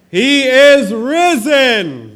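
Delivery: very loud, booming, rising, stretched-out swooping call. Leading a call-and-response with the audience: loud. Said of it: "Now we're gonna do it loud".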